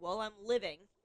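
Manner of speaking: put-on loud, bone-dry, deadpan sarcastic old lady voice. Retelling an old lady's reply to a morning greeting: imitating Sue's deadpan sarcasm. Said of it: "She looks at me dead in the eyes".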